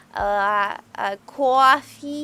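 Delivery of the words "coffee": put-on New York accent on "coffee". Showing off different accents, saying a word in a new york accent. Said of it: "my New Yorkin one".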